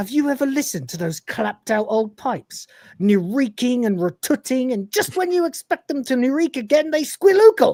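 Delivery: high-pitched rant edging toward full hysteria. Retelling a scene, quoting a line close to complete hysteria: imitating Kochanski near hysteria. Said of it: "getting closer and closer to complete hysteria".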